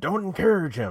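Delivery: loud high shouting. Retelling how Axiom called to a fan while getting his butt kicked, imitating Axiom yelling. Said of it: "he's yelling at the fan".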